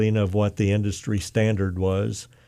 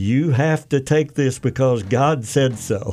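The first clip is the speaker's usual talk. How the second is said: mock, slow, drawn-out mild exclaimed yell; 4 semitones higher than usual. Retelling someone's reaction to news of a job offer: imitating someone screaming. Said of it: "she screamed".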